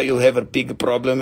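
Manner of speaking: put-on Russian accent, tough gangster style. Showing a listener the many different accents they do, in a Russian accent. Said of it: "And then we go to Italian".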